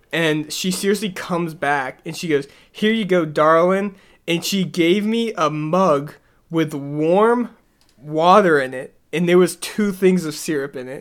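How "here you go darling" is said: put-on Southern accent with drawl. Retelling what an older waitress said when she brought syrup: imitating a Southern accent. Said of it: "she had this Southern accent".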